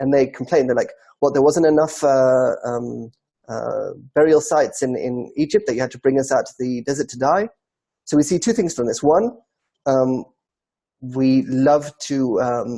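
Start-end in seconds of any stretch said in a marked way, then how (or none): none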